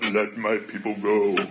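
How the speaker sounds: voice dropped way down, softly. Retelling a movie scene to listeners, low Moses voice. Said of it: "He had a low voice".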